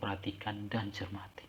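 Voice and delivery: soft, hushed, unvoiced whisper.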